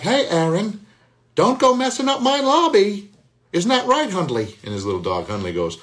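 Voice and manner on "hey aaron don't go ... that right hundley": very high, loud cartoon character voice. Voice actor shows how his doorman role sounds, Curious George doorman voice. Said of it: "The doorman sounds like this".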